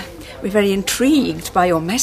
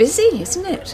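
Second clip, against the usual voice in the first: sounding taken aback, surprised, pitched up; 9 semitones higher than usual. Two people meet over coffee and one opens the conversation: surprised. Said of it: "You sound surprised".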